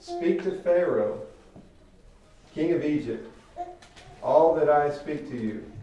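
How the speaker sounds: firm, commanding tone.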